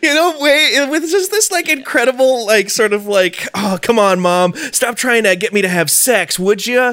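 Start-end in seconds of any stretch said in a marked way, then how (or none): 3.5-6.9 put-on breezy nineties kid voice. Describing how a movie character brushes off his mom: imitating Dade as cool nineties kid. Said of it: "kind of way that is just, like, so cool nineties kid type thing".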